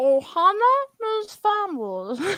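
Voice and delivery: slow, drawn-out alien creature voice. Recalling trying to make friends, talking in a Stitch voice. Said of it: "I learned how to talk like Stitch".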